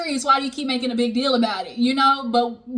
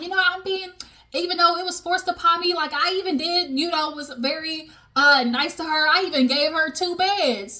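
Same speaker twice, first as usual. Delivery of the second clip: sweetly sarcastic, put-on niceness, boastful tone; 4 semitones higher than usual. Retelling what Portia said at dinner: imitating a sarcastic remark. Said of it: "you trying to be sarcastic".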